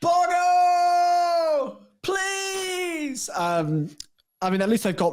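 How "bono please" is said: put-on scream, much higher in pitch. Picturing Hamilton sat there calling across the continent, imitating Hamilton screaming. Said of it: "going to be screaming across the continent".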